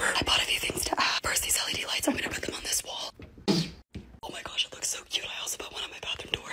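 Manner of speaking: very quiet, hushed, whispered narration. Showing new room decorations while the voice is failing: whispering. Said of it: "I'm just gonna whisper".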